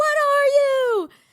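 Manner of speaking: shrill, loud, very high screamed shout. Retelling screaming at the sky from a balcony, retelling a scream. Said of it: "That's what I screamed".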